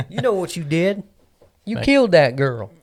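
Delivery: very loud, high, put-on country twang. Reenacting what an interrogator said in an interrogation: put-on country accent. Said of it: "It's always some kind of country accent".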